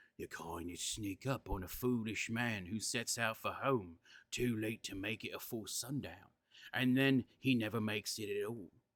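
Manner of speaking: hoarse, hushed, low, coarse half-whisper. Reading a story aloud, a nervous villager warns of shadows: coarse half-whisper. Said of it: "He lowered his voice to a coarse whisper".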